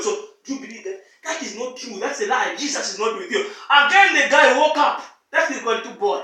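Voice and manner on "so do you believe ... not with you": low, soft, devilish whisper. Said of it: "Satan again came and whispered".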